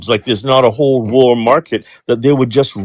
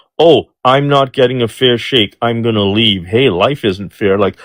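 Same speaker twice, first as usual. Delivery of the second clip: ordinary talk, nothing marked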